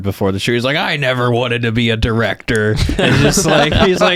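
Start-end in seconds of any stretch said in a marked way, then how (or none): 0.8-2.7 put-on, heavily drunken delivery. Joking about the YouTuber getting drunk before a shoot: imitating a drunk MKBHD. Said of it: "M K B H D just getting real hammered".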